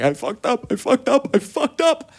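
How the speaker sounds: play-acted very high sobbing, high crying wail. Retelling telling a parent about needing help, imitating own crying. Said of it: "So I was just crying".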